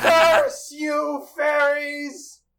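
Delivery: very high, enraged, shrieking furious curse. Voicing a character trapped by fairies: screaming in character. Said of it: "and screams".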